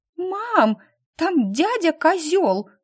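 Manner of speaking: blurted, loud, high-pitched exclamation. A girl suddenly calls out to her mother, exclaiming loudly. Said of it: "громко воскликнула Полина".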